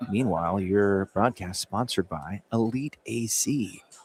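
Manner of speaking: hushed whisper. A sportscaster on an asmr broadcast reads the sponsor mention, whispering. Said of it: "when I don't have to whisper".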